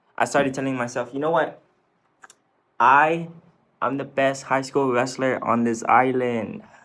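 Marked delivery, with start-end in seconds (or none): none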